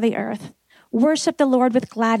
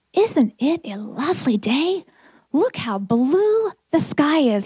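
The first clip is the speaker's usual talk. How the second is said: emphatic, insistent, every word firmly stressed; 3 semitones higher than usual. Retelling what a woman said after looking up at the sky, retelling an emphatic line. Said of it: "she said emphatically".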